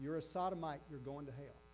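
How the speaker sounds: ordinary delivery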